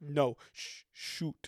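hushed, whispered mutter under the breath. A speaker retells a man reacting while a woman kept talking: imitating a mutter under his breath. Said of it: "under his breath".

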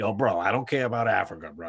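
put-on thick New York hybrid accent, Queens meets Long Island. Speaker imitates his college self, in a thick Queens Long Island accent. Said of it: "a Queens Long Island hybrid accent".

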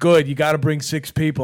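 put-on New York accent. Retelling a phone call with a club booker: new york accent. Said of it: "could not have been a more New York guy".

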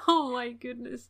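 voice close to crying. Moved by what the other speaker is saying, on the verge of tears. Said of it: "now I'm gonna cry".

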